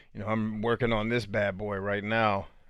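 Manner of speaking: ordinary delivery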